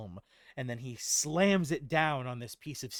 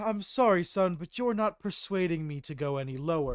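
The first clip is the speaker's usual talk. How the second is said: mocking laugh, higher and louder; 5 semitones higher, 4 dB louder than usual. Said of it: "he laughs at you".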